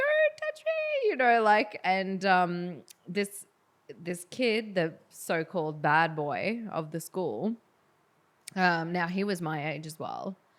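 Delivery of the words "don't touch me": play-acted very high, scared, panicked cry. Retelling running away from a boy in primary school, imitating a scream. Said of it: "And we were screaming".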